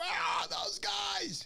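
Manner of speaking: put-on rough, very high, drawn-out hollering shout. Speaker recalls arriving at the rocks and hearing Charlie, retelling a scream. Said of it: "I heard him screaming".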